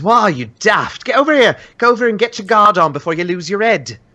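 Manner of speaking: very high, quick calling-out voice. The barkeep spots newcomers without collars and calls out to them, calling out. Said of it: "calls out to you".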